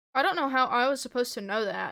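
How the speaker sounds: ordinary delivery, nothing marked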